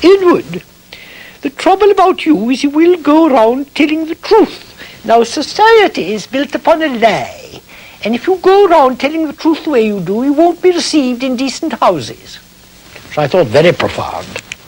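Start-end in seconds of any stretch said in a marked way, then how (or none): 0.0-12.4 put-on, very funny society lady voice. Retelling what a society hostess told him at sixteen: imitating Lady Cunard's very funny voice. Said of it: "she talked like this".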